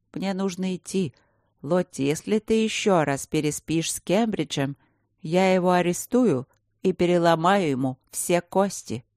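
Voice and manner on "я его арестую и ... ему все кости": ordinary delivery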